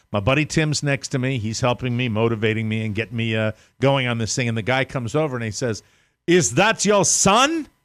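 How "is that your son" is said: slow, high, put-on German accent. Retelling what an old man asked at the gym: imitating a German accent.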